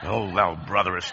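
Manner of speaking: very low, mock old-English-style prayer voice. Mocking a normal guy asked to pray at family gatherings: mock deep prayer voice. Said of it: "his voice goes deep".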